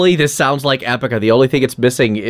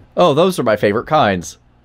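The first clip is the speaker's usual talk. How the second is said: usual speaking voice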